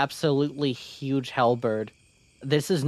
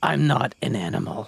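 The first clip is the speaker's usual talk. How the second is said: very deep unicorn character voice. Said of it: "A very deep voice for a unicorn".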